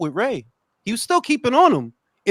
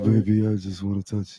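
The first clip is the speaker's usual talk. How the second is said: put-on seductive mumble, lower and quieter; 12 semitones lower, 5 dB quieter than usual. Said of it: "it sounded like he was like".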